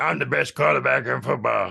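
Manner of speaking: sweet voice with creaky edge. Imitating Patrick Mahomes's old voice, like Kermit the Frog. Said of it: "stuck with his sweet voice".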